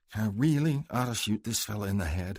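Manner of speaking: private, half-heard muttering under the breath. Tyler speaks more to himself than to Crandall; muttering to himself. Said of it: "Tyler muttered".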